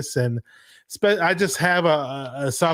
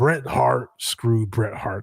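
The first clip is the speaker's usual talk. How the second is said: deliberate, heavily stressed, slow, drawn-out put-on voice; 4 semitones lower than usual. Doing a Vince McMahon quote in his voice: Vince McMahon voice. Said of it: "I don't know if I can do the voice".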